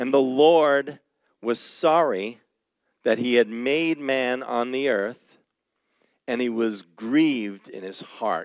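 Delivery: slow, unhurried, deliberate reading voice. Reading a Genesis verse aloud so it sinks in, reading slowly. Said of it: "I'm reading that slowly".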